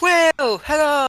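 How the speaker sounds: very high-pitched, loud hollering. Shouting for Quill at his house after no one answered. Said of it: "I'm gonna start shouting".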